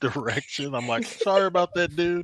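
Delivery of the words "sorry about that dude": play-acted sarcastic tone, pitched very high. Retelling bumping into people while walking: retelling a sarcastic apology. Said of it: "you piece together the whole sarcasm".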